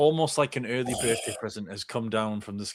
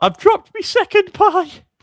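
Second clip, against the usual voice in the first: very high, very loud fake blubbering wail; 13 dB louder than usual. Acting out a teammate crying over a dropped pie: mock crying as Shah. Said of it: "why are you crying".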